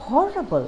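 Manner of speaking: horrible with exaggerated heavy stress on hor. Showing adjectives gaining meaning through stress: exaggerated stress on hor in horrible. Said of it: "I am exaggerating the stressed syllable to add emphasis and even more meaning".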